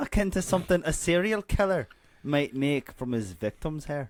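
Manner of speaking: put-on Scottish accent, narrating style. Reading a book blurb aloud with a co-reader, in a Scottish accent. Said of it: "Take it away, you Scotsman".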